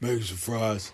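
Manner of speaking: put-on voice dropped right down, deep. Retelling a man who came downstairs and started cooking, imitating a deep voice. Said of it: "The deep voice".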